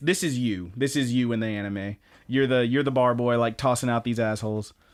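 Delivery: ordinary talk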